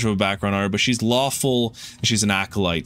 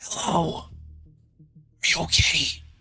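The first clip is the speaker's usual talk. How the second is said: soft whispered call projected across a distance; 5 semitones higher, 4 dB quieter than usual. Game narrator voicing a character calling out to someone wounded, whispering. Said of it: "she kind of whispers out".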